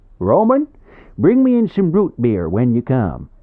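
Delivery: very loud, hoarse Midwestern holler. The nosy neighbour calls out to someone: hoarse Midwestern bray. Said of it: "a hoarse Midwestern bray ... the nosy neighbour".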